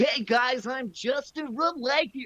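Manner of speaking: very high pitch, slow pace. Imitating a YouTuber's video intro: imitating Justin from Lanky Box. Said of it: "His voice is kinda hard to do".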